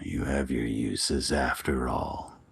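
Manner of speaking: deep, devilish, bestial demonic voice. Game master voicing a voice heard in a character's head, devilish, bestial voice. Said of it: "a devilish, bestial voice in your head".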